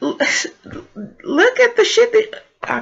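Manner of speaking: very high, faltering, stammering sputter of disbelief. Ranting about something a woman said, speak with baffled stuttering. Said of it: "I'm stuttering because I'm baffled".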